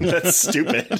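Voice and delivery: slow, laughing, dismissive delivery.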